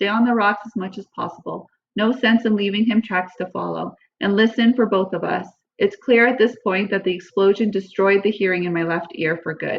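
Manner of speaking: usual speaking voice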